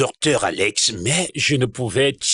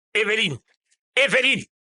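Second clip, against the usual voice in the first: loud yelling, much higher pitch; 10 semitones higher than usual. Calling out for evelyne, who asks why, shouting a name. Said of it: "Pourquoi tu cries mon nom de cette façon?".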